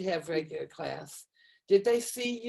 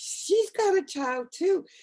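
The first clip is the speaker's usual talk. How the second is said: mock very high, thrilled, excited child's shout; 11 semitones higher, 4 dB louder than usual. Retelling a student spotting their teacher in a grocery store: imitating a child yelling excitedly. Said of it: "she just started yelling across the grocery store".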